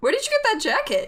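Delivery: high character voice ranging widely in pitch.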